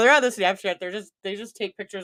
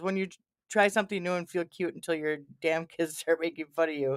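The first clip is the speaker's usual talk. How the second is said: normal talking voice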